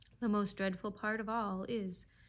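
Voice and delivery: ordinary delivery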